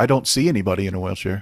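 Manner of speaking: put-on sarcastic tone. Answering whether one greets people in wheelchairs, playing a sarcastic jerk. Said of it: "I get to be a sarcastic jerk".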